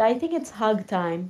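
normal talking voice

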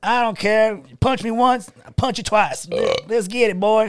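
put-on high, crazy, wild country-boy voice. Retelling a fighter's entrance gimmick: imitating Bryce Mitchell as crazy country boy. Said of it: "came into the U F C kinda like".

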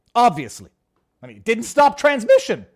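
loud screaming. Mid-discussion of a hypothetical, the speaker apologizes for screaming. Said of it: "Sorry, I'm screaming".

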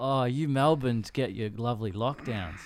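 smug, delighted, gleeful, gloating taunt. Retelling how Paris gleefully teased those in lockdown: imitating Paris gleefully gloating. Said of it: "Paris was gleefully awaiting".

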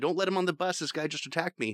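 hollered, high-pitched direct shout. Recounting his wife on the phone to 911, shouting at the guy: retelling a shout. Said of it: "shouting at the guy".

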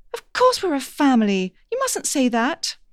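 startled, shocked, insistent, with swooping pitch. Another character protests the narrator's flat statement, sounding shocked. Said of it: "sounding shocked".

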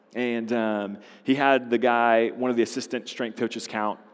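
ordinary talk, nothing marked

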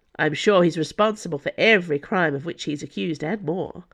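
plain reading voice

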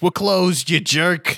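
high-pitched talking keyhole character voice. Narrating a game scene where the keyhole answers someone trying the door, talking keyhole voice. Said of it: "he says".

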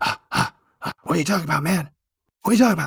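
creepy stage half-whisper, close into the mic. Imitating Joe Biden half-whispering into the mic: Joe Biden creepy half-whisper. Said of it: "that kind of Joe Biden creepy whisper".

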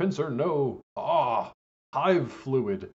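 very slow yell, every word stretched out. Recapping an episode, recalling a character's cry: imitating Peter Cullen's yell. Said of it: "hearing Mantor yell".

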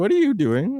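very high, concerned, worried voice. Retelling the girlfriend's question as she left for vacation: imitating concerned girlfriend. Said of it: "my girlfriend was very concerned".

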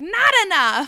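loud, high-pitched, belted-out delivery. Quoting a favorite iconic line from a stepfather character: Wallace Shawn impression. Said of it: "That's a pretty good impression".

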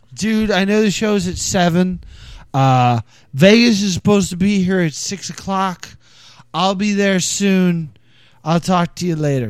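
play-acted slurred drunken rambling, words running together. Recounting a phone call after three dark beers: imitating drunk slurring. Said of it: "I called Will slurring".

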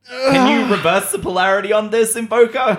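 high, loud, desperate put-on shout.

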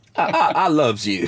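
put-on, fake street-slang voice.

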